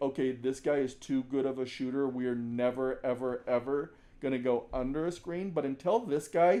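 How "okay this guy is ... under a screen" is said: ordinary talk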